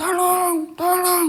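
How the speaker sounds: high, loud shouting cry.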